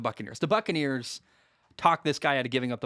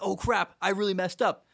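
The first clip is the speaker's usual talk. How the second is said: panicky, caught-out blurt, pitched up; 6 semitones higher than usual. Retelling a player's reaction after giving the ball away: imitating panic.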